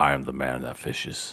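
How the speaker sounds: deep, weighty, commanding voice in a breathy whisper. Predicting what Fujishiro will say next: Fujishiro's deep commanding voice. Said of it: "With his really deep voice and his just commanding demeanor".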